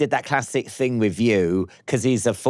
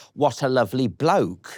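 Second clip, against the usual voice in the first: plain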